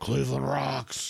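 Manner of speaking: rough, creaky, high put-on bear voice. Speaker voicing a bear from cleveland, bear impression voice. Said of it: "That was my bear impression".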